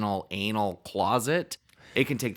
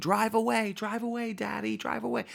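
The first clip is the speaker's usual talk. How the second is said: acted, very high, raw, rough little-boy shriek; 12 semitones higher than usual. Retelling a movie scene where a little boy screams: imitating a boy screaming. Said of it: "the little boy screaming".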